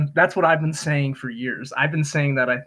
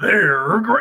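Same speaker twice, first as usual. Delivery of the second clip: odd, weird, high cartoon tiger voice; 5 semitones higher, 3 dB louder than usual. Describing a creepy cartoon tiger who pops up out of nowhere, weird tiger voice. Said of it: "he has that weird voice where he's like".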